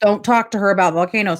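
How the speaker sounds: ordinary delivery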